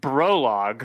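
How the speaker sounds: very stern, firm. Voicing a character warning a companion by name: very stern. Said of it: "Peraspitis is just gonna say very sternly".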